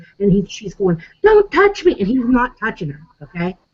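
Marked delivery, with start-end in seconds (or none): 1.3-2.0 very high, in-your-face yelling. Retelling a confrontation, imitating a woman yelling. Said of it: "getting in his face, yelling at him".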